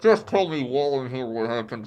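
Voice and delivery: muffled voice. Retelling a scene where a character lies face down on the floor: muffled voice. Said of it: "Barry's voice is muffled".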